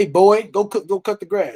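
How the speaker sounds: blunt, loud, rude, barked, grandfatherly voice. Retelling how a grandfather ordered a boy around: imitating a rude grandfather. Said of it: "my grandfather, he was rude".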